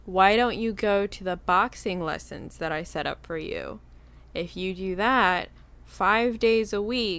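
ordinary talk

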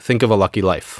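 ordinary talk

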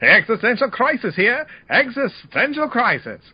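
put-on very high, old-timey announcer-style shout. Demonstrating what the ECO-pal device announces, ECO-pal old-timey 1920s voice. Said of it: "kind of an old-timey 20s voice".

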